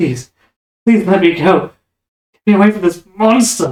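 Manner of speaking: tearful, crying, pleading voice. Voicing a captive child's plea to be freed: crying, pleading plea. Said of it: "these crying, pleading eyes".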